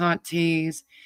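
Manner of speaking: usual speaking voice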